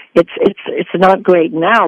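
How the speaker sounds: ordinary talk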